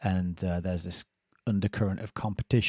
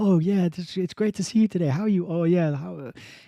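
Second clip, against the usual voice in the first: very high, overly sweet, fake-cheerful politeness; 10 semitones higher, 4 dB louder than usual. Describing people who rate each other on their phones, imitating overly fake, happy politeness. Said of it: "being like overly fake, happy and polite".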